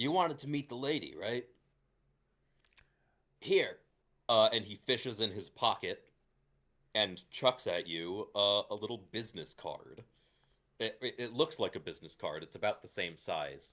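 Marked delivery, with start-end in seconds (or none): 0.0-3.8 high, loud shout calling out. Walking back to the group, he turns to you, shouting back. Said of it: "he actually uh shouts back out to you".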